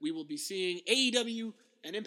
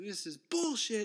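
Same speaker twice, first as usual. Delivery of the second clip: mock wrestling announcer, angry yelling commentator voice; 2 semitones higher than usual. Retelling a commentator's reaction on air: imitating Tony Schiavone yelling. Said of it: "Tony Schiavone on commentary yelling".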